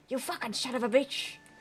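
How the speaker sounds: put-on atrocious Australian accent. Greeting a chatter on stream in a bad Australian accent. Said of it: "my Australian accent is atrocious".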